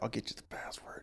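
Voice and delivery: soft, voiceless whisper.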